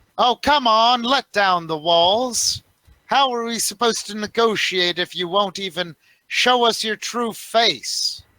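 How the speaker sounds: rowdy, boisterous, loud, very high voice. Voicing a character calling out to negotiate, in a boisterous voice. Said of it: "a rather uh, boisterous voice. Go".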